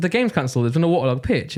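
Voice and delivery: normal talking voice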